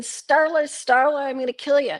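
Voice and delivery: acted mild scream. Retelling a man at a gas pump threatening a girl: imitating someone screaming. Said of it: "He starts screaming".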